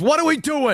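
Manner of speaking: squeaky, bewildered, very high pitch. Retelling a moment when someone tried to read super chats: imitating Beardo. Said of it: "He goes".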